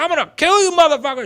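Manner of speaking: very loud, high, shrill top-of-the-lungs scream. Retelling charging up a hill at two men: retelling a scream. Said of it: "screaming at the top of my lungs".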